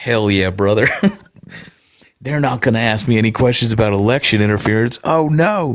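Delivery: put-on American Southern accent. Mocking a man giving interviews in front of a John Deere tractor, put-on Southern accent. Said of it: "I don't know why I'm making him Southern".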